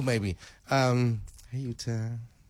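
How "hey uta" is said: put-on soft, quiet baby-voice coo, sweet and lovey-dovey. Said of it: "as example".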